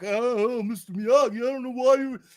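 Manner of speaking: faltering, stammering put-on voice. Mocking a movie character who thanks his teacher: imitating Daniel. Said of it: "And he's still fucking like".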